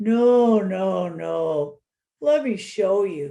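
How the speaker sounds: big, deep grown-up voice. Speaker retells a voice they heard speaking to a little kid, big deep voice. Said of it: "this big, deep voice".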